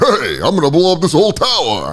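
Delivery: animated caricature voice, pitch swooping all over. Joking about a hypothetical threat call to police, Rodney Dangerfield impression. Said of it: "What if Rodney Dangerfield called in the threat".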